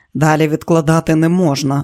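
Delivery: plain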